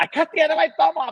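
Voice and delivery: very high, mangled and garbled speech. Retelling how a woman couldn't understand him, the speaker acts out garbled speech. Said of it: "Because she couldn't understand me".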